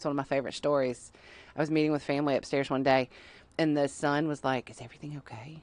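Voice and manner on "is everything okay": put-on whisper, quieter. Retelling how a family's son quietly asked what was wrong: imitating someone whispering. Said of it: "He's, like, whispering to me".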